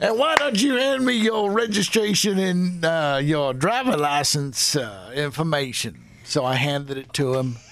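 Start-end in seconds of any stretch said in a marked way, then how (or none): 0.0-6.0 put-on Arizona police officer accent. Retelling a traffic stop, playing the officer who pulled him over, Southern Arizona accent. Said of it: "as he does this accent right now".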